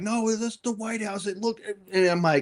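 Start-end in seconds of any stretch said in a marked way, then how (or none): 0.0-1.3 mock insistent, adamant shouted yell, high. Retelling a man arguing with a woman, the speaker imitates him yelling. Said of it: "he's just yelling like".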